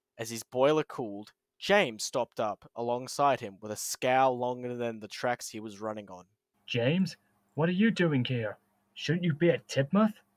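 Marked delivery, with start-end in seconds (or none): 6.7-10.1 worn-out, tired, weary, raised voice. An engine questioning another engine that stopped alongside, asking tiredly. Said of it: "Wilbert tiredly asked".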